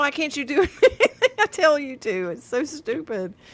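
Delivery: imitated angry yelling. Retelling own insults at a computer program: imitating own angry shouting. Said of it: "I'm shouting at a program".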